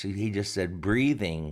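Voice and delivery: ordinary talk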